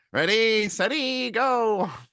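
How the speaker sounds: very high-pitched old-movie cartoon villain voice. Reviewing Furiosa, quoting a character's line in a 60s movie villain voice. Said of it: "He sounds like a 60s movie villain".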